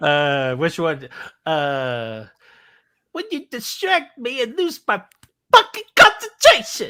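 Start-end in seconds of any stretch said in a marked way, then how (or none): 3.1-6.9 very high, loud voice. Answering a request for Jack Torrance quotes: Jack Torrance quote as John Travolta. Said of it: "Jack Torrance quotes as John Travolta".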